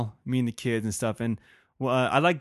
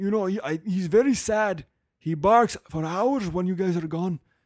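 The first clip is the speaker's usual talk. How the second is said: horrible, put-on German accent, pitched up; 6 semitones higher than usual. Retelling a neighbor's words to the speaker, in a horrible German accent. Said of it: "That's a horrible German accent".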